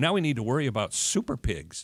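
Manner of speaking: tongue-in-cheek, sarcastic, swooping delivery. Introducing the next topic, a problem with wild pigs: sarcastic. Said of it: "I'm gonna say this kind of, uh, sarcastically".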